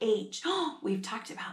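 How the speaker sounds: ordinary delivery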